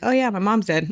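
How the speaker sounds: breezy, acted, high-pitched flippant sarcasm. Speaker recalling how she coped after her mom died, retelling her sarcastic remark. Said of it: "the sarcasm kind of was going that route".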